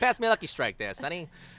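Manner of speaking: booming, loud, high put-on Atlantic City accent. Joking about a character suddenly being from Atlantic City, the speaker puts on an Atlantic City accent. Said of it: "Atlantic City accent".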